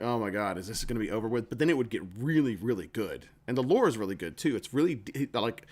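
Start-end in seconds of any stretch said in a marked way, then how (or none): none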